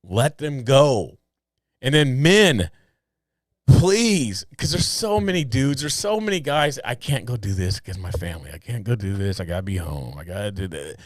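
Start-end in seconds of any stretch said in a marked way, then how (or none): 6.8-10.9 put-on deep, hushed, dejected, depressed mutter. Acting out men excusing themselves from battle to stay home, imitating sad men. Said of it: "they sound so just like depressed and sad".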